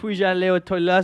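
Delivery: poor put-on French accent. Joking about what kids learn in French classes, horrible French accent. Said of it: "horrible French accents there".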